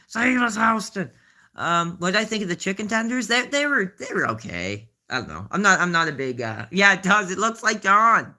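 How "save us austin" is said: high, loud hollering like a wrestling announcer. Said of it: "He starts hollering".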